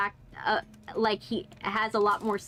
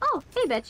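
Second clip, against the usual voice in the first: endearing, fond, affectionate, pitched-up voice; 8 semitones higher than usual. Showing how the word is said to friends: endearing, affectionate tone. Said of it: "in an endearing ma-, way and not, like, a, like, an angry way".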